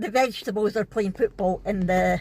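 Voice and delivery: ordinary talk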